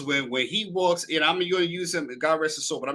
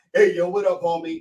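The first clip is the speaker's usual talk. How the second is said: put-on casual, slangy voice, louder; 5 dB louder than usual. Mocking the idea that the dad switches voices: imitating Uncle Will's casual street talk. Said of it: "it's not like he does this. He goes".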